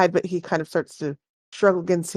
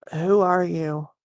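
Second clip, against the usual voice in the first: simple, plain, unforced delivery. Voicing a tied-up, struggling captive asking who you are, speaking quietly. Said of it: "you hear him saying this kind of quietly".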